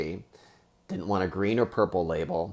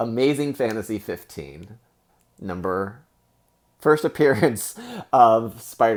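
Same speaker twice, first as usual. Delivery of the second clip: loud, choked-up awe, emotion catching in the throat; 3 semitones higher, 5 dB louder than usual. Showing off a long-wanted book that is finally yours, getting choked up. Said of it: "I'm getting choked up".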